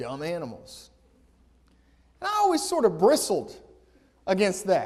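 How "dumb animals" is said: muttered under the breath, lower and quieter. Retelling a buddy's remark in class: imitating Hutch mumbling under his breath. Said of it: "he would sort of mumble under his breath".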